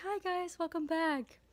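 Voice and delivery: soft, gentle, careful tone. Greeting viewers back after a break, speaking gently. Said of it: "I'm speaking gently so you don't get jump scared".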